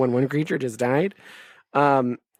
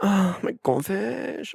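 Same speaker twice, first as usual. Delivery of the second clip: mock choked-up, high, teary, close to crying; 6 semitones higher than usual. Imitating Claire Danes in a movie scene: Claire Danes about to cry. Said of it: "Always about to cry".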